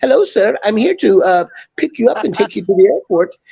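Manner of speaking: disguised, put-on Indian accent voice. Playing a joke on a blind passenger when picking him up: put-on indian accent. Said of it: "I'd disguise my voice like I was from India".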